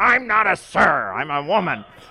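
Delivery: gruff, loud, very slow and deliberate. Remembering a woman who answered the phone, the speaker quotes her reply: imitating Mary Batchelor's gruff voice. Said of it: "She had a gruff voice".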